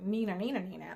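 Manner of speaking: ordinary talk, nothing marked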